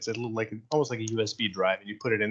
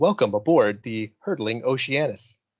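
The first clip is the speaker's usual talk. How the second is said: ship computer ai voice, louder; 6 dB louder than usual. Voicing the ship's voice greeting the crew at startup: ship computer voice. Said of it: "voice comes across. And, uh, he says".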